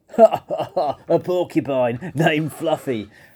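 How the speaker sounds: slow, howling laughter through the words. Narrator voicing the rhinoceros laughing at Fluffy's name: howling with laughter. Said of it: "howled the rhinoceros".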